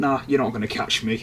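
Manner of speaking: usual speaking voice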